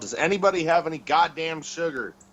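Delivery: restrained, mild shout. In a role-play scene, pulling a hand from the throat to call out, yelling. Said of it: "pull my hand away from my throat and yell".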